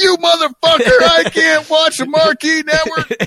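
mock furious, shrill angry screech, pitched way up. Imagining his reaction to being called to the office phone, mock-angry yelling. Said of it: "I'm going to yell at you".

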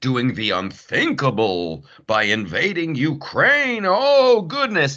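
sarcastically. Commenting to another speaker in a conversation: sarcastic. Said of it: "and I'm being sarcastic here".

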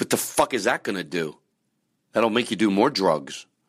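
all fired up, ranting. Ranting at listeners about drugs, then catching himself: yelling. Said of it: "I shouldn't be yelling".

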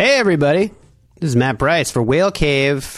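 salesy, selling-something infomercial announcer voice. Podcast host opening the show with his intro: salesy, like selling something. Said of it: "I sound like I was selling".

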